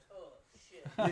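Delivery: incredibly deep, very loud, booming exclamation. Retelling what a wrestler said on seeing someone: Ron Simmons deep voice. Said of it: "An incredibly deep voice".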